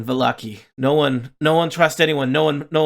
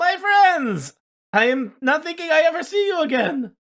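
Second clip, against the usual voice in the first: very high, pitched-up character voice. Narrating a scene, greeting returning friends at the door in Blinsky voice. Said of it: "That's what Blinsky sounds like".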